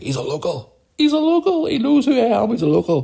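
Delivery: put-on play-acted, very high-pitched, tipsy, insistent, rambling voice. Retelling meeting a local on camera: imitating own drunk speech. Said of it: "At that point, I was pissed".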